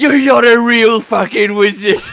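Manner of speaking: very loud, high, shrill screaming. Narrating a game scene where Gul'dan screams at another character: screaming. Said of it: "he just screams at him".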